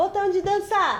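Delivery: high-pitched, cartoonish character voice. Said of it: "Igual, igual o desenho faz".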